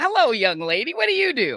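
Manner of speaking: friendly, easygoing, relaxed man's voice. Retelling a greeting at a desk: Brian Williams voice. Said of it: "I can't do your, the voice".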